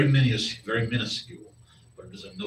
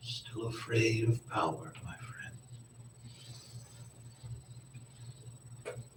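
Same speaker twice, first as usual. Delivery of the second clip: barely audible, very faint whisper; 14 dB quieter than usual. A game master voices a whisper heard by a departing player, very quiet whisper. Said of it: "you hear a very silent whisper as it says".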